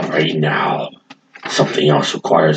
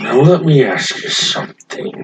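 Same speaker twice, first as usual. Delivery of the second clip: fantasy dwarf character voice, pitched up; 8 semitones higher than usual. Speaking in character during a scene, slipping into a dwarf voice. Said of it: "I briefly slipped into my dwarf voice there".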